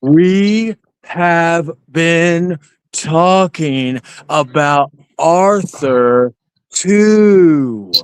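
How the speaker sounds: very slow, deliberate, drawn-out, stretched words. Repeating a point to someone just called stupid, speaking slowly. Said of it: "I'll speak slowly so you can understand".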